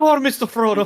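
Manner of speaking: put-on Scottish accent. Echoing how the other speaker just said a line, in a put-on Scottish accent. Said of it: "you just went Scottish".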